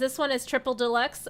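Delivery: ordinary talk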